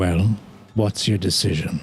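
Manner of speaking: composed, weighty, untroubled, even voice with gravitas. Narrating to the players, a distant figure asks their decision in a calm and quiet voice. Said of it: "in a what seems to be a calm and quiet voice".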